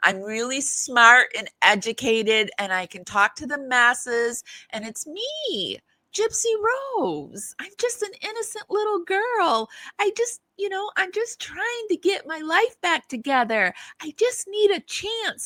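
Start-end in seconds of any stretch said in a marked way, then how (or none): 4.7-15.5 very high-pitched, put-on innocent voice. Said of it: "This is her little Miss Innocent voice".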